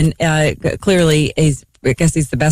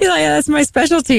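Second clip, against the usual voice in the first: put-on Norwegian accent, much higher; 11 semitones higher than usual. Retelling what a man said when unsure how to take a compliment, norwegian accent. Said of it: "this is [name]'s Norwegian accent".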